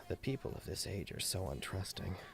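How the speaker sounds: very quiet, barely there under-breath mutter. Playing a character who mutters an aside, muttering very quietly. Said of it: "he mutters it very quietly".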